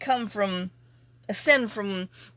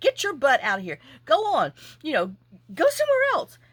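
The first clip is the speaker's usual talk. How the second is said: mock screaming, high and swooping; 6 semitones higher, 3 dB louder than usual. Retelling shooing him away from the faucet, retelling a scream. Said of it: "So I'm screaming like".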